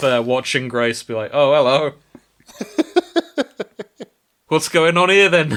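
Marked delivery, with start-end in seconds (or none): 1.3-5.5 bad Liverpool accent, loud and high-pitched. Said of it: "I can't do a Beatles accent".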